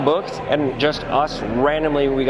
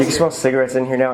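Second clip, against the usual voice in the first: normal talking voice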